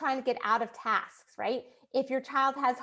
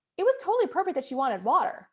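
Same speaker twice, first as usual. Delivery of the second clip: normal talking voice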